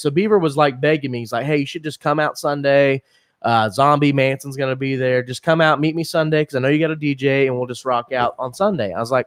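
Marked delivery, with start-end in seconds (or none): none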